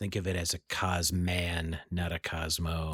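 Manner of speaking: low, slow, hushed voice under the breath. Speaker acts out a man handing you your drink, imitating a half-whisper. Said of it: "he whispers to you as he hands it".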